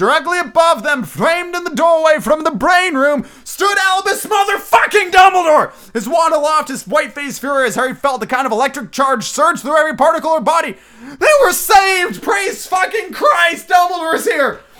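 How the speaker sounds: hyped-up, high, loud, excited shouting.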